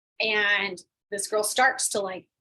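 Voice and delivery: ordinary talk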